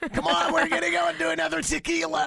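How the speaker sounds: very high, hoarse, raspy party-rep hype voice. Teasing another speaker about her raspy voice: mock raspy party tour rep voice. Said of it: "You sound a bit like a tour rep".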